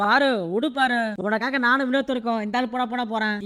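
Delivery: ordinary talk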